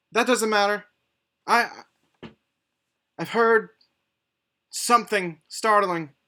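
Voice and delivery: woman's voice. Running a tabletop game, voicing the response the players hear: female voice. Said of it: "And it is a female voice".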